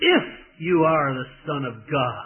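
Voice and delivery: acted scornful sneer, heavy stress on "if". Acting out a quoted challenge as you imagine its tone: mock-sneering, stressing 'if'. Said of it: "a sneering voice with a big emphasis on the if".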